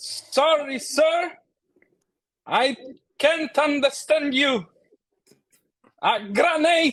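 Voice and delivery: speaking very loudly. Playing a character who answers an officer, speaking very loudly. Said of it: "speaking very loudly in French".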